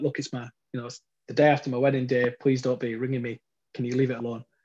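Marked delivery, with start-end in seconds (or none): none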